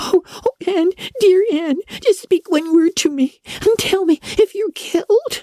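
very high, frantic shrieking. Anna kneels beside her fallen friend Anne and calls to her, shrieking. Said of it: "shrieked Anna, throwing herself on her knees".

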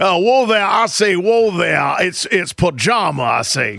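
blustery, blustering rooster voice with a Southern accent. Pitching a voice for the character Cousin, the speaker does a Foghorn Leghorn voice. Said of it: "I want him to have like an old foghorn leghorn voice".

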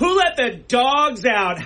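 mock very high, wild childlike shriek. Retelling how a man riding a scooter in circles chased people, screaming. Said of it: "just screaming".

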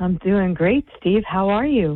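sultry, sexy, seductive radio-style voice. Show host answers her co-host's greeting on air, sexy voice. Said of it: "now you're turning on the sexy voice".

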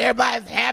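grudging, irritated, mad and sour tone. Retelling the other speaker's words back: imitating someone sounding mad. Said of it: "Why you, why you mad?".

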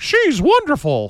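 very high, tiny cartoon squeak. Summarizing comments on an appointee, mocking the few supporters: Mickey Mouse voice. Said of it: "in that same Mickey Mouse voice".

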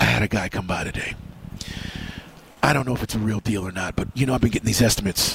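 hushed, very low whisper. Retelling what Mike said when he came in today, Mike's whisper. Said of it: "and he's whispering".

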